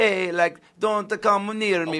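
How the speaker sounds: fake Jamaican accent, very high and loud. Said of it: "you're doing Jamaican".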